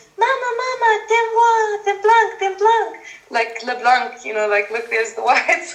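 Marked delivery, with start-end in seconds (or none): 0.2-3.0 put-on very high, tiny little child's voice. Retelling what young children running behind the speaker would call out, little child's voice. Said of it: "they would have this little voice".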